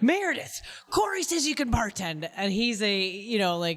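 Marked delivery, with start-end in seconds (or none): 0.0-2.3 mock, abrupt, sudden high shouted yell. Retelling how a bar owner called out to her: imitating Jamie yelling. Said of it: "suddenly started yelling at me".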